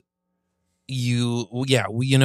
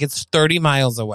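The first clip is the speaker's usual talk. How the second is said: ordinary talk, nothing marked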